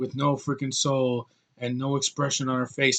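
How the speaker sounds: mock expressionless monotone. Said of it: "talks like this".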